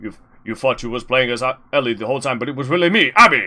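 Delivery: most butch voice possible. Discussing the game, the speaker performs Abby's line in a butch Abby voice. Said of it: "I'll do it in my most butch voice".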